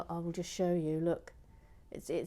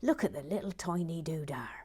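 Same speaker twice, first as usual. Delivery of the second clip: put-on Cornish accent edging toward a pirate voice. Relay what a new goose from Cornwall says, as [name] in assumed Cornish accent. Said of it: "I'm going to assume she's got a Cornish accent".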